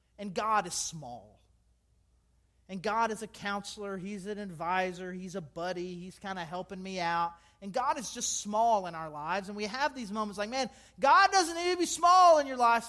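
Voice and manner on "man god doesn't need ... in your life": very loud, high, raised preacher-style yell. Speaking to listeners and breaking into a yell. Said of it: "now I'm yelling".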